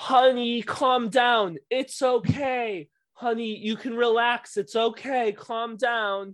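mock high, loud, reassuring hollering yell. Retelling a mother calling out to her son, imitating a mother yelling. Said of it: "and you're yelling".

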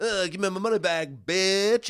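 put-on cocky rock-star voice. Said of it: "he'd get a little full of himself".

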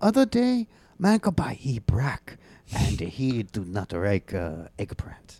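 imitated Japanese accent. Asked to retell the customer story in an accent: japanese accent.

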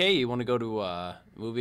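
normal talking voice

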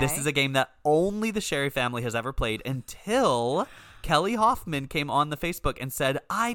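ordinary talk

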